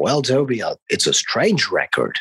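very deep, low voice, dropped way down. Retelling what a guy said to him about the record, in a deep voice. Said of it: "he said in this deep voice".

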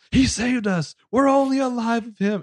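put-on dramatic movie-style yell, very high, drawn-out. Retelling a movie scene where everyone is yelling: imitating Madeleine Stowe yelling. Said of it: "Madeleine Stowe is going to yell".

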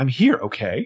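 put-on snippiness. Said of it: "Don't get snippy with the shusher".

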